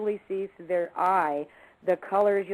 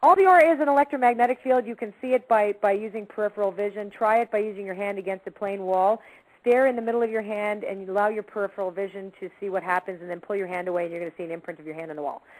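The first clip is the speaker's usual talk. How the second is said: loud, rapid-fire, as fast as possible; 2 semitones higher, 5 dB louder than usual. Explaining the aura to listeners with three minutes left, talking very fast. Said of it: "as fast as I could".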